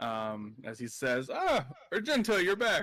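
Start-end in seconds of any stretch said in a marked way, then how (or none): 1.3-2.8 hearty, jovial voice, loud and high-pitched. Voicing the raccoon bartender greeting a returning player: jovial greeting. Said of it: "you hear a nice jovial hello".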